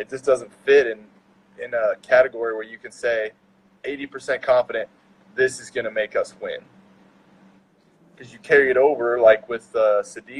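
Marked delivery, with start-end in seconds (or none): none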